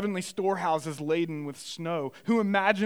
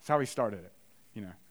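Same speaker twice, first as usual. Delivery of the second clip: normal talking voice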